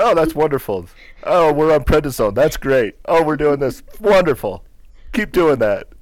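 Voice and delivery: high, loud, upbeat bright gushing. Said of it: "He's like".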